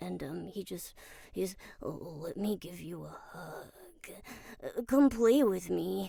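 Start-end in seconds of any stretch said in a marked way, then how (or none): 1.8-6.1 sad, mopey, forlorn, pleading character voice. Showing a game role who is sad about everything: sad Amumu voice. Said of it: "really sad about everything".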